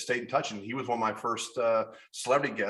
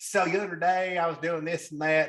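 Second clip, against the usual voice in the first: put-on, teasing Kentucky accent, pitched up; 7 semitones higher than usual. Describing a woman from Bullitt County, mocking her Kentucky accent. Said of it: "I make fun of her voice all the time".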